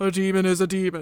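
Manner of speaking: curt, terse, man-of-few-words delivery. Playing both sides of a mock question-and-answer about demons, best Logan voice. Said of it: "I put on my best Logan voice".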